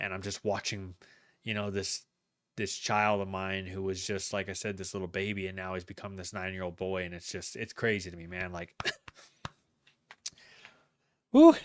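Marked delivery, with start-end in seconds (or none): 7.0-11.6 raised, swooping, choked-up voice. A parent on their channel, watching their son reach nine, choking up. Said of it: "I'm I'm choking up a little bit".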